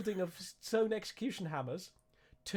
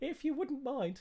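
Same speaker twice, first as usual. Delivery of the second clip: put-on high, grandmotherly old-lady voice; 6 semitones higher than usual. Game narrator voicing a character making a request of the players: grandma voice. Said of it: "I suddenly sounded like I was a grandma".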